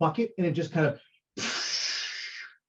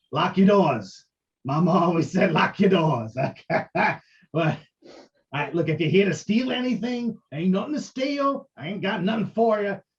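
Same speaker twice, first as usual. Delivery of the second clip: little goblin voice, higher and louder; 3 semitones higher, 4 dB louder than usual. Voicing a tiny goblin caught behind a curtain: goblin voice. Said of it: "this little guy opens up the curtain".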